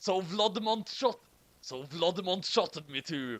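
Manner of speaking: put-on gravelly growl voice.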